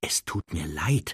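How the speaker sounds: in a whisper. Apologizing to the house-elf, whispering. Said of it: "flüsterte er".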